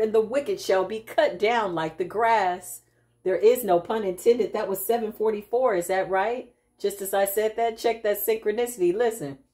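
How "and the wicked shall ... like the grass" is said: plain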